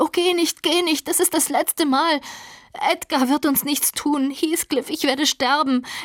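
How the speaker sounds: screeching. Narrator reads a woman clinging to a man who tries to leave, shrieking. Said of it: "kreischte sie".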